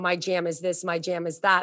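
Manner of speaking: plain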